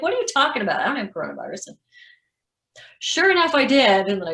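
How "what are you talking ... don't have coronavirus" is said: put-on indignant, heated, angry, swooping delivery. Retelling the reply to being told not to come back to work: imitating own angry reply.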